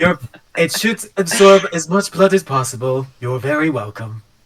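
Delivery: gentle, soothing voice. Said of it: "I'm trying to do like a gentle revive voice, like this Baymax".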